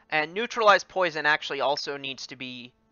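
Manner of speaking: ordinary talk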